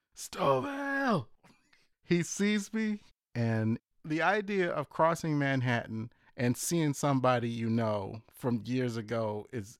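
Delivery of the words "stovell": very high-pitched, carrying yell. Retelling calling to a friend from a van across the street: imitating his own yell across the street. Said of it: "I yell across the street".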